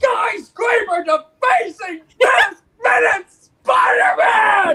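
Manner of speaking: loud, heated, ranting delivery.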